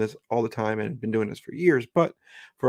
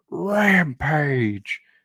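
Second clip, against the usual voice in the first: put-on wrestling ring announcer voice; 4 semitones higher, 3 dB louder than usual. Starting a review of AEW Rampage, saying 'Rampage' in Excalibur announcer voice. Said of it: "in the Excalibur voice".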